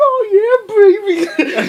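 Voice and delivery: blaring, very high moan. Retelling a funny video about a car alarm: imitating a loud orgasm car alarm. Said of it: "Like, loud as fuck".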